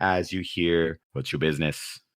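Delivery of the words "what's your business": dull, flat, dead-level monotone drone. Voicing the guard who questions people waiting in line: monotone Garrett guard voice. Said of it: "the most monotone voice of a guard".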